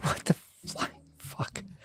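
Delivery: furious, fed-up, breathy whispered outburst. Complaining that the new Apple TV won't connect to the internet: angry outburst. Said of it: "I'm so mad right now".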